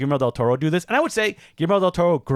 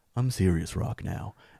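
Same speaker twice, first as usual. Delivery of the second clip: put-on soft serious voice, lower and quieter; 8 semitones lower, 8 dB quieter than usual. Imitating The Rock at an onstage interview: soft serious The Rock impression. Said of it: "I'm gonna talk in a very soft voice".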